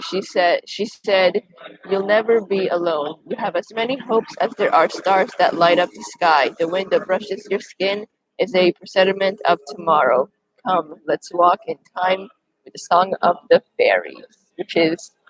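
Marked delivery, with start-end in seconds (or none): none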